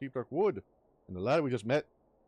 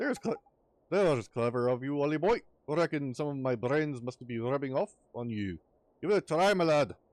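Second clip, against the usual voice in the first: put-on Scottish-Irish accent. Reading a game character's reply to the boy aloud: Drippy's Scottish Irish accent. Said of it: "getting better at the Scottish Irish accent".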